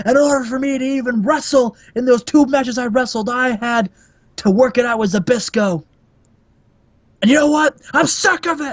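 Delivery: put-on yelling voice. Retelling the rest of the promo: imitating Ric Flair yelling. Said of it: "And Rick is like".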